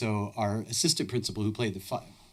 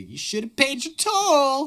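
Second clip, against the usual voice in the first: very high, swooping, hammed-up jeering voice; 8 dB louder than usual. Game master voices a hidden voice in the trees to the players, played-up mocking voice. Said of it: "then I really played it up".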